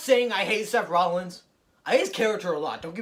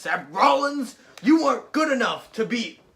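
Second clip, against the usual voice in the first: slow, pitched-up screaming delivery; 5 semitones higher, 4 dB louder than usual. Predicting a wrestling feud, acting out a promo: screaming Drew McIntyre impression. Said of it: "Come out screaming in".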